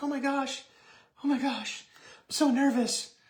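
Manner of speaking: very high, squeaky, drawn-out, anxious nervous fretting. Speaking to viewers about taking the live challenge, imitating nervous panic. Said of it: "pooping your pants a little bit, being like".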